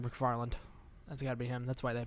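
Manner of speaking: ordinary delivery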